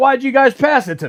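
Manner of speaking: high-pitched screaming and yelling. Commenting on a football match, act out a player who just got the ball, imitating someone screaming and yelling. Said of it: "he's screaming and yelling like".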